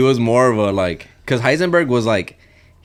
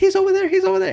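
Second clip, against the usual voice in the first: very high-pitched hysterical sobbing. Acting out a hidden lady pointing out an attacker: acting hysterical crying. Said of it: "crying hysterically".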